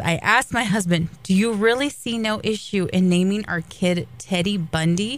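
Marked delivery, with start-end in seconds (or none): none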